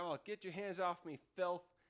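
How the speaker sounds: normal talking voice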